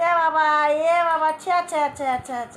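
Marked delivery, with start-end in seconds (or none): none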